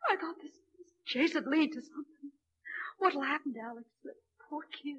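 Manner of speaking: crying through words. Telling a friend about a man who proposed to her: crying while talking. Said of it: "you're crying".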